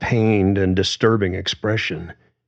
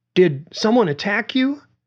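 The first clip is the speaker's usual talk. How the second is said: trembling, shaking, very high-pitched voice; 13 semitones higher than usual. Narrator voicing a woman questioning Conser after his fall, voice shaking. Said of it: "her voice shaking now".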